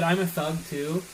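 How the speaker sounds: plain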